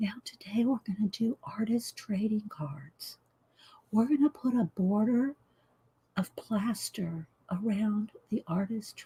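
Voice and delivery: almost inaudible, very soft, quiet voice. Speaker reenacting how they talked in their very first video, imitating own quiet talking. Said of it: "I was talking so quiet".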